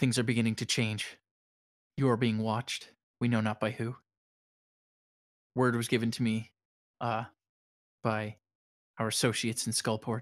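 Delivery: speaking in a hushed whisper. A game master voices a person the player kneels beside, whispering.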